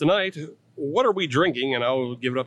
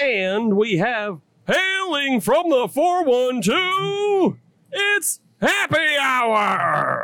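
pitched way up, boxing ring announcer voice; 11 semitones higher, 4 dB louder than usual. Introducing the next person on the show, in a ring announcer voice. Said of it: "I am auditioning for a ring announcer job".

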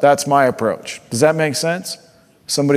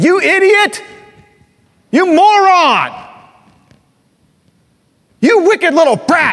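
very high, shrill, loud, drawn-out screaming; 6 dB louder than usual. Acting out an imagined father on a trail: screaming insults.

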